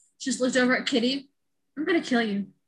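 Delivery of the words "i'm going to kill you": total calm, unbothered delivery. Retelling a movie scene where a sister confesses: imitating Lara Jean's calm threat. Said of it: "She was so calm".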